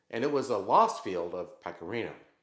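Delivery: ordinary delivery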